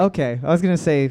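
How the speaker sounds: plain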